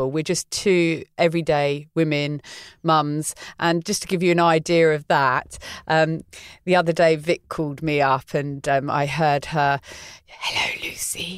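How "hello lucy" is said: soft, hushed whisper. Retelling a phone call where Vic whispered hello: imitating Vic whispering. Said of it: "Why are you whispering?".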